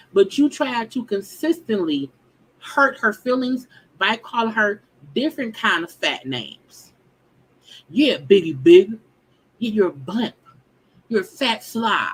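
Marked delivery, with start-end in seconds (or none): 7.8-12.1 loud, spiteful, venomous taunting, spat out. Retelling the fat insults someone threw at her: imitating venomous insults. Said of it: "with venom in your voice".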